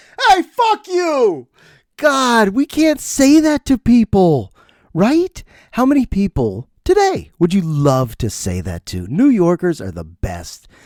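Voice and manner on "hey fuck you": mock very high, venomous, vitriolic angry yell. Recapping a movie scene, the speaker repeats a neighbor's reply; mock-angry yell. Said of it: "Listen to the vitriol".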